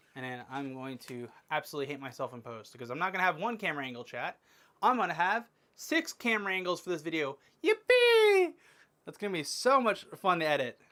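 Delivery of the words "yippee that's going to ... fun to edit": loud, sing-song fake excitement, sarcastic. Dreading editing six camera angles, sarcastic fake excitement. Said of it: "I'm being sarcastic".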